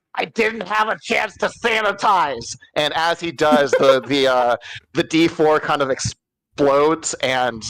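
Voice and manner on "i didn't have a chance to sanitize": shouted in character, much higher. In a tabletop game, the storyteller voices a character drawing a giant syringe, shouting in character. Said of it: "and he shouts".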